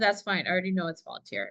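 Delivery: ordinary delivery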